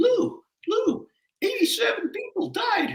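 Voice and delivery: voice pitched very high. Retelling how the guy from 36 truck came in that morning: imitating Vernon David's high voice. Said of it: "he had kind of a high voice".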